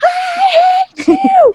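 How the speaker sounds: shrill, very high-pitched screaming. Retelling a scream at a friend on a ride: retelling own screaming.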